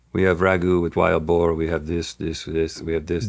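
mock very low, flat, expressionless deadpan. Retelling how a man listed the dishes in English, imitating a deadpan delivery.

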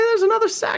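very high, excited cry of recognition. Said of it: "I was like".

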